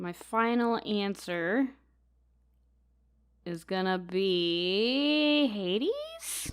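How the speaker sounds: hesitant, unsure, very slow, words stretched out. Giving a final answer in a quiz round, not very confident. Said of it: "you don't sound very confident in that".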